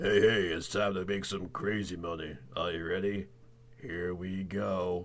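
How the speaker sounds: very low, clumsy, really bad put-on voice. Joking that a character was secretly the "hey, hey" voice: really bad "hey, hey" voice impression. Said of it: "Gus was the "Hey, hey" voice this whole time".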